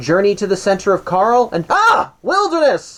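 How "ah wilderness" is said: high, exclaimed "ah! wilderness!". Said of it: "I have to say it like that".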